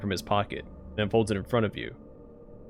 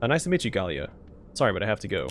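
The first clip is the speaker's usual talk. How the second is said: plain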